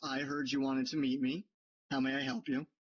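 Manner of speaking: self-assured, with an air of confidence. A game master voices a woman greeting the players who asked to meet her; with an air of confidence. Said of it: "says with an air of confidence".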